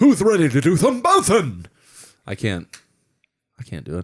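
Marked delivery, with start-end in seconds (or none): 0.0-1.7 very high, loud, swooping, bouncy cartoon voice. Friends discussing the actor who voices Winnie the Pooh, doing a Tigger voice. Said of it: "The contrast in those voices is fucking insane".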